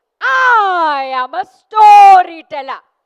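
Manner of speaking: big, very loud, energetic, with drawn-out I. Repeating a practice line after being asked for more energy: louder, more energetic. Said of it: "Can we be louder and little more energetic?".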